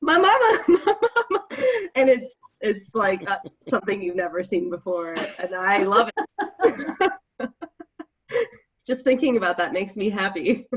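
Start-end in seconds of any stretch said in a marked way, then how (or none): 0.0-1.5 loud, high screaming. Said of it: "and start screaming".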